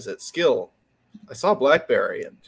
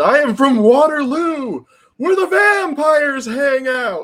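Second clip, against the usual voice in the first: put-on scream, much higher, louder and slower; 13 semitones higher, 7 dB louder than usual. Describing a viral video clip, imitating Glenn Howerton screaming. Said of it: "And he screams".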